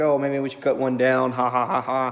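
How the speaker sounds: dry sarcasm ending in spoken ha-has. Retelling an idea from earlier in the night: imitating own sarcastic tone. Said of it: "kinda sarcastically".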